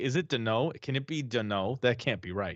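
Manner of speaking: ordinary delivery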